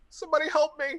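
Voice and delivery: faraway-sounding, very high, pleading cry. Voicing a fleeing character heard calling from the distance. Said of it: "then you hear in the distance".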